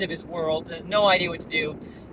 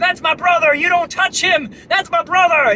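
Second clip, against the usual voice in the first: frantic, shrill scream, very high and loud; 11 semitones higher, 10 dB louder than usual. Retelling a man guarding his downed brother, retelling a scream. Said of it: "Indian guy starts screaming".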